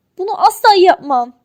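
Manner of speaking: very loud, stubborn, firm, sulky tone. Told to go and apologize for an outburst, refusing, firmly sulking. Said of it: "dedi En kararlı bir şekilde somurtarak".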